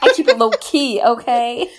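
high, loud mock swagger voice.

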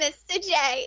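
put-on cartoon voice, pitched way up. Getting ready after a request to hear it, doing the Harley Quinn voice. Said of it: "you haven't heard my Harley Quinn?".

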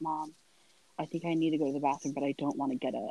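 whispering. Retelling what was said to mom right after surgery: retelling a whisper. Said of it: "whispered to my mom".

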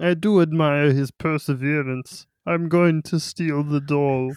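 put-on puppet-like voice. Asked to use the voice to talk about stealing a doll: Barney voice. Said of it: "can you use that voice".

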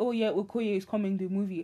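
normal talking voice

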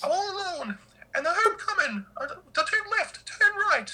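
squeaked out, very high pitch. Trying out a Mickey Mouse impression for another speaker: Mickey Mouse voice. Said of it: "I'm trying to do my Mickey Mouse".

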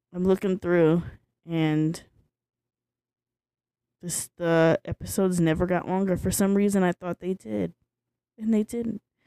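sad, downcast voice. Talking about an old show's first season, sounding sad. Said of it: "I don't know why I sound so sad about that".

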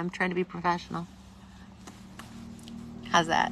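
tearful crying speech. Hosting Sunday Night Live, apologizing to viewers for crying, speaking while crying. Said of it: "forgive me for crying".

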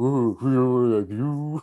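dumb-sounding voice, very slow and drawn out. Imagining a comeback to a heckler on stage: stupid Donald Trump voice. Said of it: "Fucking stupid voice".

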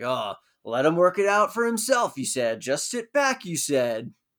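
grouchy, sour, mumbling grumble. Recapping a scene, imitating Alan mumbling. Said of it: "kind of mumbling".

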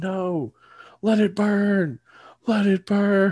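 very high, very slow, drawn-out yelling. Speaker recounting how a movie ends, retelling a yell. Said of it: "Jamie Lee Curtis is just yelling".

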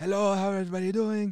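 horrible fake Greek accent. Describing an older Greek man coming around the table, the speaker quotes him, bad Greek accent. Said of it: "that was a horrible accent".

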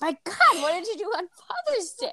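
play-acted very high, swooping, exaggerated sarcastic tone. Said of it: "Dorothy is over the top sarcastic".

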